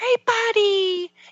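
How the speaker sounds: put-on singsong baby-talk voice.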